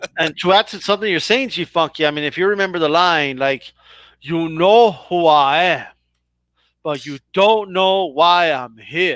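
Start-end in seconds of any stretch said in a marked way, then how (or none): 4.2-9.2 bad, slow, drawling Cuban accent. Quoting a remembered line to a fellow speaker: bad Razor Ramon Cuban accent. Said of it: "the worst uh, Cuban accent ever".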